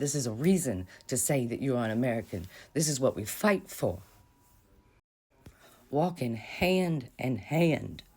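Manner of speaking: choked-up voice catching with emotion. Showing photos of a bridge walk in Selma, getting choked up. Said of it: "I'm getting a little bit choked up".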